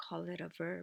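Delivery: quiet whispered aside.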